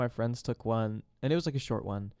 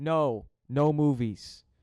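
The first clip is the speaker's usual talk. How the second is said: crude, loud, blunt caveman talk; 3 semitones higher, 5 dB louder than usual. Quoting a meme where he refuses a movie date: imitating caveman speak. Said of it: "Caveman speak".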